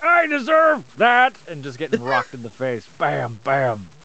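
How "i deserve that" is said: shrill, howling, high, full-throated yell. Voicing a character who is being punched in the face: yelling in character. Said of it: "I'm just gonna start yelling".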